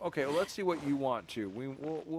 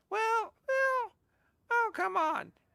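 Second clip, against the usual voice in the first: very high, slow, drawn-out character voice; 4 dB louder than usual. Streamer thanks subscribers, then tries out a voice: Paimon voice attempt. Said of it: "I'm trying to do a Paimon voice".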